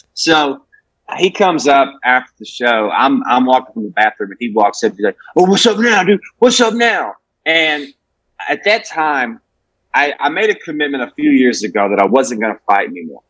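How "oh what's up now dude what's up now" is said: furious, high-pitched, angry voice. Retelling how an angry audience member confronted them after the show: imitating a furious heckler. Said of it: "he is fucking furious".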